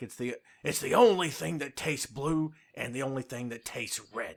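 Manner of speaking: ranting delivery.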